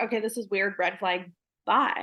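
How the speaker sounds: usual speaking voice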